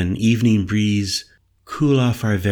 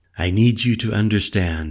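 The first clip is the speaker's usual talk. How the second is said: plain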